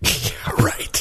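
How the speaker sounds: skeptical, scoffing whisper.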